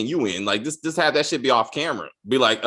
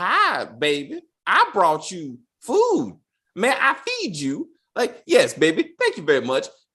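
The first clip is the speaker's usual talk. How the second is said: mock stilted, wooden acting, slower; 5 semitones higher than usual. Mocking someone's bad acting in a scene, mocking wooden acting. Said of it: "that acting is shit".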